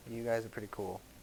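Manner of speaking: very quiet, low half-whisper under the breath. Acting a character who nods, then mutters to the group: half-whispering under breath. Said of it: "whisper under my breath".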